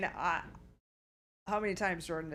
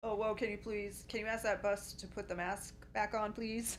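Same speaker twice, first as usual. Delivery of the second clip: ordinary delivery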